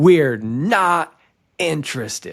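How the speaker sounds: held-back yell, mild and not stretched out. Retelling how an angry caller ended a sales call: imitating someone screaming. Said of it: "And he's screaming at me".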